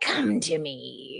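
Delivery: low-pitched storybook witch voice. Recalling a memorable voice from books, doing a Baba Yaga voice. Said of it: "I remember Baba Yaga because of her voice and how she was like".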